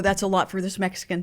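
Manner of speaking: ordinary delivery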